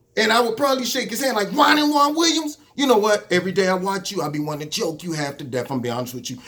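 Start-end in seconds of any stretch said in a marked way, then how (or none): none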